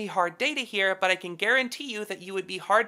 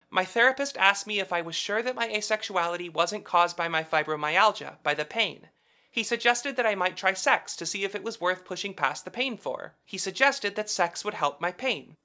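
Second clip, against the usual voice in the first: usual speaking voice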